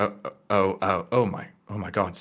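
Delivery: stunned, shocked outburst with stuttering and stammering. Narrating a scene, voicing a woman who checks him over with spells, shocked. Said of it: "shocked at each of you".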